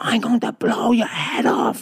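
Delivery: acted half-scream. Telling a story about a night by a cave, imitating someone screaming. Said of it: "start screaming".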